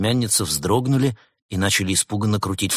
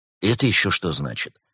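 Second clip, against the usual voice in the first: ordinary delivery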